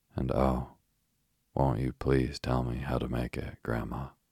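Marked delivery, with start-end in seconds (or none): none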